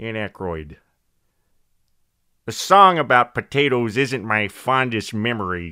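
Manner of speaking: put-on Chicago accent. Doing an impression on the spot: Dan Aykroyd impression, Chicago accent. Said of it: "I'm just going to do a Chicago accent".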